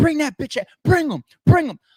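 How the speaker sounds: put-on very high, loud, passionate screaming. Retelling a face-off moment after a threat to bring someone: imitating Easy screaming. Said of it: "the way that Easy started screaming".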